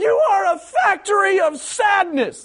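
mock very high, very slow, drawn-out screaming. Retelling a football fan's rant at the stadium: imitating a fan screaming. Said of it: "he's screaming at the stadium".

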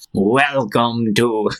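eerie, creepy showman announcer voice on the mic. Speaker retells a dressed-up man with a microphone welcoming visitors, creepy announcer voice. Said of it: "like with a creepy voice".

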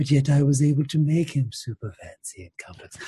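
put-on whispery voice. Imitating a lady from the bar in her creepy whisper voice: imitating the lady's whisper voice. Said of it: "That's her voice to me".

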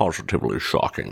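breathy, hushed, breathed-out disbelief. Reading a news item aloud, quoting a famous line: Sean Connery voice. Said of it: "As Sean Connery would say".

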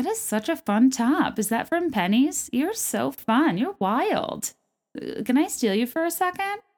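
chatty mom-friend small-talk voice. Speaker recalls how mom's friends talked at bunco parties, imitating mom's friends. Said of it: "how I used to hear my mom's friends talk and they'd be like".

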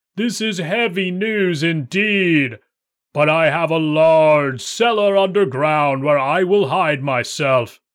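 thunderous, booming giant voice. A narrator reads the giant answering cousin Jack's news: thunderous giant voice. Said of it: "I am a giant with 3 heads and can fight 500 men and make them fly before me. ... with a voice like thunder".

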